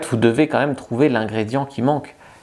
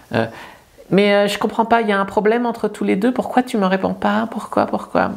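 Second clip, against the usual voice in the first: timid, submissive, small and high meek voice; 9 semitones higher than usual. Demonstrating a humiliating message to avoid, small meek submissive guy voice. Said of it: "je fais la petite voix de".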